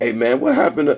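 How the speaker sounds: high, nosy, gossiping busybody voice. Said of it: "if a person began to".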